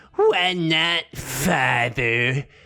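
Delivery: snide, sarcastic, condescending, talking-down tone. Reading a story aloud, answering a father: condescending sarcastic teenager tone. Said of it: "in exactly the condescending".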